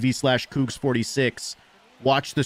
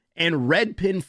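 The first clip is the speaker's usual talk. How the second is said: cracking voice, breaking high mid-word; 5 semitones higher than usual. Thanking supporters by name for their months, voice cracking. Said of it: "wow, my voice cracked".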